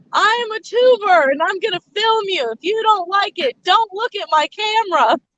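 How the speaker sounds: high-pitched mock announcer voice. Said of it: "Just walk in".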